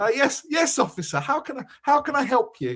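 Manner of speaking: put-on plummy, upper-class posh voice. Retelling being stopped by a police officer, answering in a posh act. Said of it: "You spoke in your posh act".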